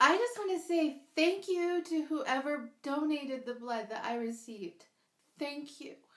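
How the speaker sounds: emotional, heartfelt delivery. Speaker telling her story, apologizing for getting emotional: emotional. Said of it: "I did not know I was going to get emotional".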